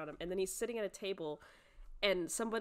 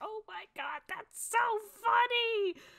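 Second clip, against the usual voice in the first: mock very high, loud, hysterical laughter through words; 7 dB louder than usual. Recounting a scene where a character finds a joke hysterical: imitating hysterical laughter. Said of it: "He starts just busting a gut out there".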